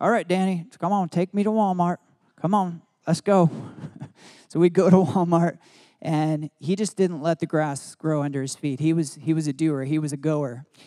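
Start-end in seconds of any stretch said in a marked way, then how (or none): 0.0-3.5 put-on Southern accent, spoken deep. Speaker quotes his grandfather in his eighties, imitating grandpa's deep southern accent. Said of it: "He had a deep southern accent".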